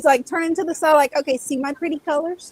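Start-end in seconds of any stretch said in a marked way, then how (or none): 1.2-2.5 preening, smug, showing-off fish voice. Voicing a pretty fish strutting in its tank: voicing a strutting show-off fish. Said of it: "you see him just strut".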